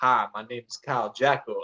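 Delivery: gentle, slow, soft-spoken voice. Teasing another speaker by imitating how they first introduced themselves: imitating a soft voice. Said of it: "how you were soft during that whole".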